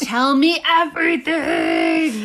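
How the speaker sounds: cartoonish puppet voice. Speaking to the other speaker after planning to make the moon vanish, Muppet voice. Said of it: "Muppet voice".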